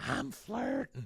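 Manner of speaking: very high, hushed little whisper. Retelling a man whispering to another man, imitating a whisper. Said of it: "He's like whispering to him".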